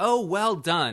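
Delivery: loud, high-pitched shout.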